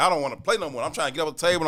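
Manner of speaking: put-on tearful, crying, childlike voice. Retelling being beaten at spades by relatives: imitating his past crying. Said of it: "I'm crying, like".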